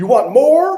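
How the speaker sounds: shrill, very loud voice. Retelling the husband asking his wife again: imitating a raised voice. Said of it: "now he raises his voice and says".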